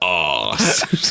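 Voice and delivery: impression voice with mock outrage. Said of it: "It is Jeremy Clarkson voice that he loves doing".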